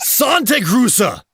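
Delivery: mock-angry fake German accent. Asked to say it as angry as possible in German, last try: mock-angry fake German. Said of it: "you certainly sounded mad enough".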